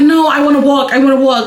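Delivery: ordinary delivery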